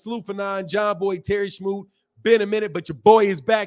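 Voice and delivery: ordinary talk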